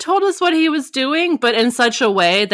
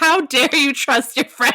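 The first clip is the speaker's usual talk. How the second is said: put-on, imitated scream; 2 semitones higher than usual. Retelling reacting to a book character, imitating own past screaming. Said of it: "I was screaming at him, like".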